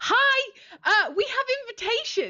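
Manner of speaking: very high, slow, drawn-out, swooping sing-song. Voicing a character telling guards they have invitations: voicing Lollipop. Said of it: "Lollipop will be like".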